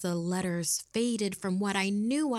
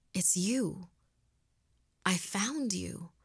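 shocked, wondering, stunned, slow realization. Reading a story aloud, answering a man from a past life: in shock. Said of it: "I replied in shock".

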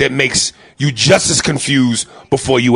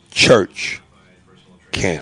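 'church' stressed more than 'camp'; 7 semitones lower than usual. Saying two words with more emphasis on the first: stress on 'Church'. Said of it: "More emphasis on the first word".

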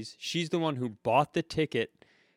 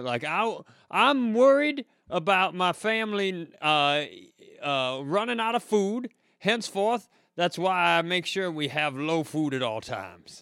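put-on drawl, pitched higher; 5 semitones higher than usual. Riffing about motivation, the speaker does a Hillbilly Hedberg voice. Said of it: "This is Hillbilly Hedberg".

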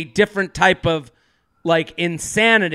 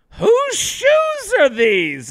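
play-acted, very high, full-volume swooping holler. Retelling her mom at the front door during breakfast, imitating her mom's loud voice. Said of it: "And she's like so loud".

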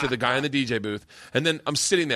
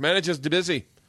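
rough, put-on attempt at an Australian accent; 3 semitones higher than usual. Retelling the reply when asking to speak to a manager: attempted Australian accent. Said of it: "I think I'm doing Australian".

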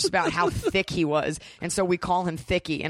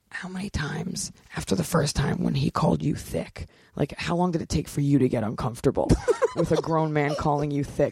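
hushed, whispered voice; 2 semitones lower than usual. The speaker retells walking up to Matt afterward and asking him, whispered. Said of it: "I just whispered, I go".

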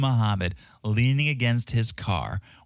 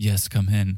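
put-on formal voice, slower pace. Retelling how the new Uber driver greets a young passenger, imitating Muhammad's formal tone. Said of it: "Like, so formal".

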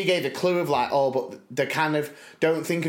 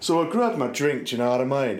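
put-on Brummie, Birmingham accent voice. Doing an impression of Kim's uncle for a listener: imitating Kim's uncle. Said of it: "I was doing an impression of, of Kim's uncle".

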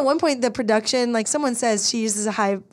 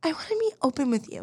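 weird put-on baby voice, much quieter; 4 semitones higher, 6 dB quieter than usual. Imitating how someone talks to another person, in a weird baby voice. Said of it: "weird baby voice stuff".

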